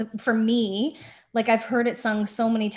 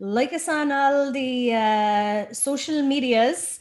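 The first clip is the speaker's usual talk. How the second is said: bad put-on Irish accent; 2 semitones higher than usual. A host signs off asking listeners to like them, bad Irish accent. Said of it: "I'll say this in my best Irish".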